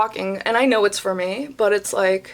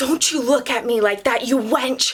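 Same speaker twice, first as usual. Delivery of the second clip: put-on, mock yelling; 3 semitones higher than usual. Retelling what a woman yelled at the speaker over a table; retelling a yell. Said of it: "she's literally yelling over a table".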